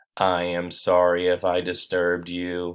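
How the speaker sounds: even, calm, clear, slow, unhurried voice. Narrator reading the weeds' words to the dog Pookie, clear, calm voice. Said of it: "the weeds spoke to her in a clear, calm voice".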